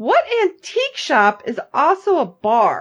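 crazy, swooping, drawn-out sarcastic tone. Speaker retelling what she asked about an antique shop's sign, retelling a crazy sarcastic question. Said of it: "I ask it in that crazy, sarcastic way".

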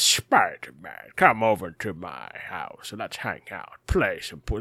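large man's voice, slowed. Describing the villain from the Spider-Man animated series, doing a Wilson Fisk voice. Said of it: "he talked a lot like this".

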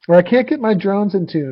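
high-pitched, whiny, complaining student voice. Imitating a pupil's complaint about tuning: annoying student voice. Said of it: "that's my annoying student voice".

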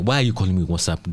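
put-on angry voice. Retelling an argument with a friend: imitating an angry argument. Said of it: "I was arguing with my friend Michael".

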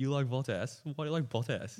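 put-on high voice through fits of laughter. Retelling how a teammate reacted to a fantasy pick: imitating someone laughing while talking. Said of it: "just starts losing it, like, in laughter".

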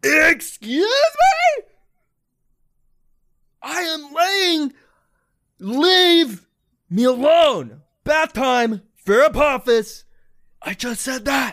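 very high, very loud shrill swooping sing-song, stretched "me". Voicing Apophis, disturbed at bath time by a knock: voicing Apophis. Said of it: "You hear".

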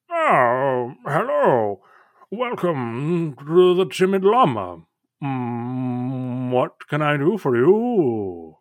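squat toad-creature voice with drawn-out mm. Describing a scene, voicing a toad proprietor greeting arrivals at a swim-up bar, small round toad-person voice. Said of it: "toad person who like as you approach says".

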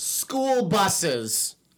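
loud yelling. Arguing a point about school buses with other speakers: yelling. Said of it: "Can you not yell directly into the mic?".

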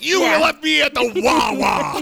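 very high, shrill, loud New Jersey yell. Showing how a line sounds in their head, like someone yelling: New Jersey accent. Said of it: "like someone from New Jersey yelling about Wawa".

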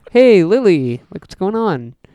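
slow, drawn-out, goofy monster voice. Comparing Herman Munster and Frankenstein's monster, doing a Herman Munster impression. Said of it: "my impression of Herman".

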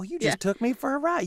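sassy Southern waitress voice. Retelling a TV episode, quoting the waitress: sassy Southern waitress from The Simpsons. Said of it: "the old sassy Southern waitress".

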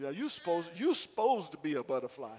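Southern dialect. Showing the congregation how to say the line: Southern Morganton accent. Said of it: "just say it in your best Southern Morganton language".

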